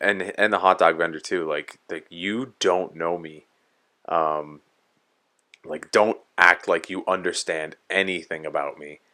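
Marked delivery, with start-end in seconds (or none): none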